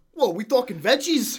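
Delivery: very loud, high, put-on Italian accent outburst. Retelling what a guy said while ordering a sub; retelling a sudden Italian accent. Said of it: "he just broke into an Italian accent and just goes".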